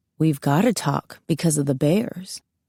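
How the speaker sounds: low, theatrical, hammed-up delivery. Reading a story, a character jokes about bears: low hammed-up tone. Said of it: "he says in a low tone".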